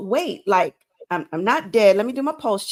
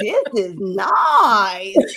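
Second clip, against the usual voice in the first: delighted, showy comic celebrity voice, selling delight like stand-up; 3 dB louder than usual. Recalling your own reaction to a workplace with free coffee and tea, in a Tiffany Haddish voice. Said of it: "in my Tiffany Haddish voice".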